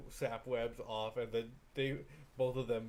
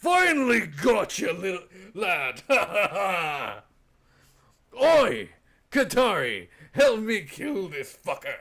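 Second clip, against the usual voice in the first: very loud, swooping fantasy dwarf voice; 7 semitones higher, 14 dB louder than usual. Voicing a dwarf who slams down on a spider: dwarf voice. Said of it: "the dwarf with a glowing axe smiling".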